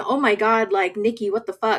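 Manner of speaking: mock panicked, freaking-out outburst. Retelling a scene where someone finds a mess: imitating someone freaking out. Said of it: "freaking out saying".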